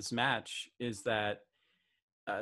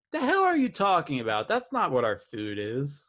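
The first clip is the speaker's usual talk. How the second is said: sounding indignant. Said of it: "are like".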